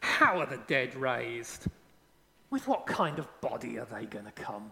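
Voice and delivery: low, mocking, dismissive, skeptical tone. Voicing questions people in the church faced, mock-dismissive questioning. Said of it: "there's a dismissive tone to the questions".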